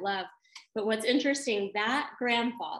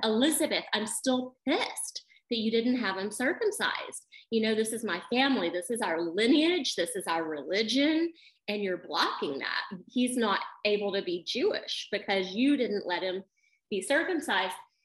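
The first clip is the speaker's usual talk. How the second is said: ordinary delivery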